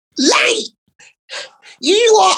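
angry little man's squeak, very high and squeaky. Retelling a man storming into the dressing room, in a squeaky Joe Pasquale voice.

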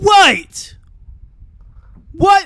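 loud, very high, accidental British accent. Reacting to a story reveal, unintentionally slipping into a british accent. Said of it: "I didn't mean to sound British just then".

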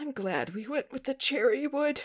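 mock teary, weepy, high tearful voice. Retelling what an aunt said beside the speaker in a moment of grief: imitating tearful speech. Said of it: "one of my aunts just goes tearfully next to me".

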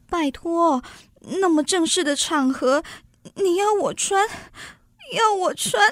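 tearful, sobbing speech. In an acted scene, the character answers the other one, crying while talking. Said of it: "亲爱的，怎么哭了".

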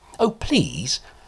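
very high, desperate pleading beg. Narrator reads a strange man at a stall, begging. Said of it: "begged the strange man".

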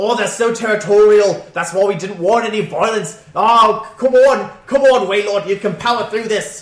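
put-on booming, loud, high Australian accent. Voicing the captain during the battle, in an Australian accent. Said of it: "He's Aussie".

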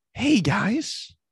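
squeaky, very high cartoon-character voice. Showing how their voice rises when greeting an audience: demoing a higher-pitched voice. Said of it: "mine becomes higher pitched as well".

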